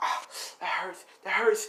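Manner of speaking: whispered pain, rising pitch.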